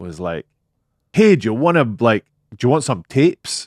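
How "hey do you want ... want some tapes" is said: put-on fairly broad Newcastle Geordie accent. Retelling what a guy who popped out said, in a new Geordie accent. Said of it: "in a very sort of new, new Geordie accent, like a Newcastle accent".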